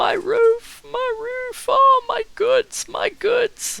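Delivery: very high, very loud sobbing wail. Voicing a kneeling merchant watching his roof burn: crying merchant. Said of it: "he's on his knees and he's crying and he's like".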